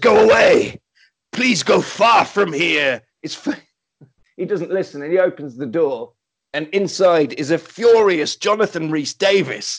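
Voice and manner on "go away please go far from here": put-on speaking with a Welsh accent. Answer a knock from inside the closed door, furious, in a deep Welsh John Rhys-Davies voice. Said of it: "a deep Welsh voice from inside says".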